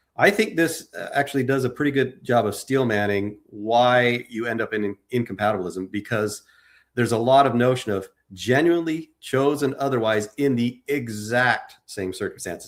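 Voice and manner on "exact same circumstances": "exact same circumstances" said slowly with strong stress. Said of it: "Emphasis on the word exact same circumstances".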